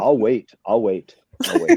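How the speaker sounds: stern, strict teacher scolding voice with swooping pitch. One speaker reenacts another scolding the group, imitating a scolding teacher voice. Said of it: "scolded you as a like his teacher voice".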